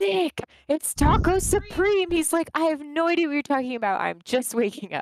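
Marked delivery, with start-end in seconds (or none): 0.0-2.1 mock held-back scream, high and very drawn out. Retelling waking someone with the baby in the next room, imitating a stifled scream. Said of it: "Not really screaming because the baby's in the next room".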